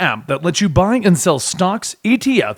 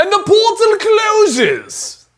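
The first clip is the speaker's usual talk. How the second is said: bad put-on British accent, very high and swooping. Finishing a sponsor read for the podcast, then a bad British accent. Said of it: "Why did I get an accent with that?".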